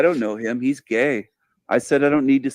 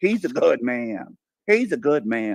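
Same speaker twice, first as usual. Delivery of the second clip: mocking put-on southern drawl. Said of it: "in your Southern accent".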